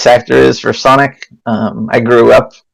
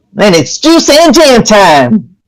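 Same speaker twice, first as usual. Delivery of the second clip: very high cartoon voice with big swooping pitch swings; 11 semitones higher than usual. Asked for an example of the cartoon voice you once did, give a bit in a Sonic cartoon voice. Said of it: "Can you give an example of your Sonic voice?".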